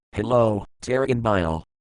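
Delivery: ordinary delivery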